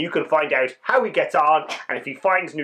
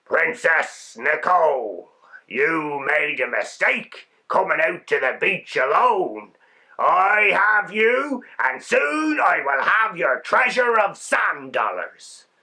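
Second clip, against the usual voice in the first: deep, scratchy, rasping sea captain voice. Narrator reads the captain speaking to Princess Nicole, in a deep, scratchy voice. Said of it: "the captain said in his deep, scratchy voice".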